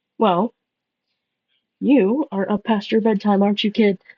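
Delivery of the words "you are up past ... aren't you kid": gently mocking, playful teasing tone. Voicing a character who teases another to bed: mocking, teasing. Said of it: "He's mocking you a little bit".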